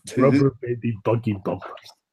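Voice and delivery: mock dead serious Russian accent. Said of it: "Just in the most dead serious tone".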